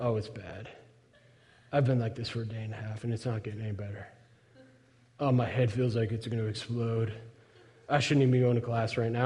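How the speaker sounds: fake sick moan, low-pitched and quiet.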